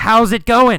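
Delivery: big, loud, high yell at full force. Teaching learners the difference between yell and whisper, demonstrating: yelling. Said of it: "Carlos yelled".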